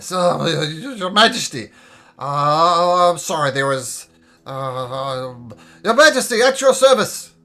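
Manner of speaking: put-on very loud drunken voice, dragged out very slow. Voicing royal guards who have been drinking, answering their monarch, drunken guard voice. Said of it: "I'm going to say in their drunken state".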